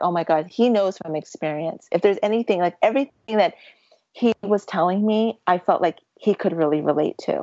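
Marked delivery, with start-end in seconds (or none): none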